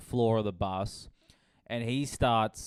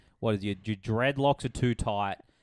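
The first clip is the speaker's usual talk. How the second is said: jeering, mocking, taunting tone. Retelling a passenger insulting the bus driver: imitating someone insulting. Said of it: "He starts insulting the bus driver".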